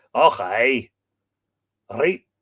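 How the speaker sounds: loud, kitschy, put-on Scottish accent. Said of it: "That's all I can do".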